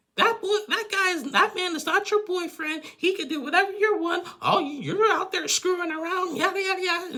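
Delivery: high, loud, shrill snapping rant.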